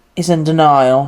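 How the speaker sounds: put-on English accent. Quoting a character who threw up in the safe room, imitating an English accent. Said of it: "You gave him like an English accent".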